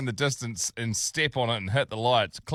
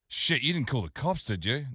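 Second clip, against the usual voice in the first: ordinary talk, nothing marked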